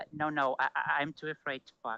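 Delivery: scared, awkward, timid, stammering voice. Retelling what a man said in a video: imitating a timid virgin voice. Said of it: "in this, uh, absolutely virgin voice says".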